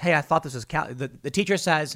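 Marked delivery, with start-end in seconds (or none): 0.0-0.9 whispered voice. Telling a joke about a math class, imitating a whisper. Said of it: "one guy whispers".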